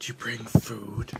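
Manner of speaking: whispered creature voice. Voicing a creature whispering inside a player's head: creature whispering. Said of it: "you hear this whispering in your head that says".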